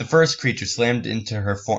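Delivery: plain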